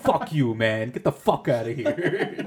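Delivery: loud, furious, fed-up outburst. Retelling a movie scene where Bob Saget gets pissed off at Dave Chappelle: imitating Bob Saget getting pissed off. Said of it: "getting so pissed off".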